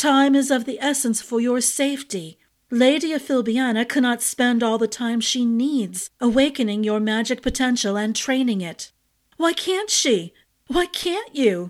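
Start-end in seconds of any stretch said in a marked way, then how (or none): 9.4-11.7 sudden, high, blurted out. Turning to a woman, someone blurts out sudden questions. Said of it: "Ash blurted".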